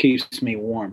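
play-acted, utterly emotionless, flat deadpan. Speaker recalling a character's line to a kid with a rifle: retelling a deadpan reply. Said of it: "And he turns and deadpan says".

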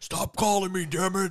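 put-on mock demon character voice. Playing a demon who keeps getting called, in a demon voice. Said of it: "some demon voice".

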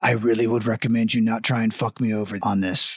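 low-pitched voice. Narrating a scene, the speaker voices an unseen figure: voice from the darkness. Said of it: "you hear a voice come from the darkness".

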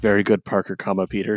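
put-on robot voice, whispering. Retelling a little robot buddy's line from a comic: imitating a robot whispering. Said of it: "the robot, the rest of the thing is just whispering the entire time".

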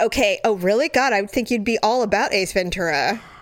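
plain

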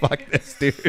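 laughing with a resigned, giving-up tone.

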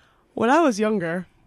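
talking through a yawn. Starting a story about being younger while a listener teases, yawning while talking. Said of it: "If you don't stop yawning".

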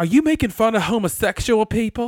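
very loud voice with light country twang. Retelling what a man asked the speaker; slight country twang. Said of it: "In that slight country twang".

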